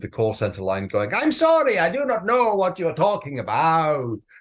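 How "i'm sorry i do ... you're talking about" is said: terrible fake Italian accent, sing-song. Imitating a call center worker on the line, terrible fake italian accent. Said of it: "That's my Italian accent".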